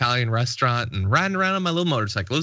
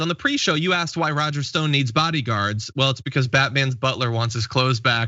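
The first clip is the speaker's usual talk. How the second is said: usual speaking voice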